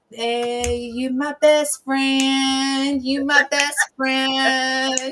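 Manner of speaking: very slow, stretched-out pet hen voice. Telling how the pet hen greets them: voicing Miss Chicken Tender. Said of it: "Miss Chicken Tender was like".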